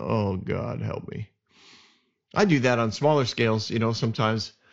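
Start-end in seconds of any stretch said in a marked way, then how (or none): 0.0-1.3 very slow, soft, exasperated muttering grumble. Speaker retells a man walking out on the king, imitating an exasperated grumble. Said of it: "walks out rolling his eyes".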